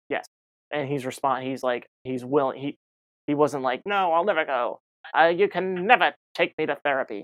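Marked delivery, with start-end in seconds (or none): 3.8-7.2 loud, belted-out put-on voice. Imitating someone refusing to go to rehab: John Mulaney impression. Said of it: "Trying to do a John Mulaney impression".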